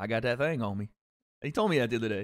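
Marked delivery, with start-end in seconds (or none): 0.0-0.9 put-on country accent. Imitating a father, in a country accent. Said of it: "with a country accent somehow".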